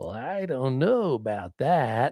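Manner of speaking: put-on slow, stoned-sounding drawl.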